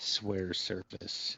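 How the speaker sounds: creepy, sinister, eerie, breathy half-whisper. Voicing an island lord demanding an oath: eerie, grinning. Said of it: "gets a eerie grin on his face when he says".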